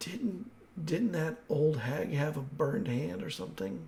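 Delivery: very quiet, barely-there half-whisper. A character in the game looks at the player and speaks: half-whispering. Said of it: "he kind of whispers to you".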